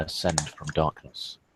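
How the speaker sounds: ordinary talk, nothing marked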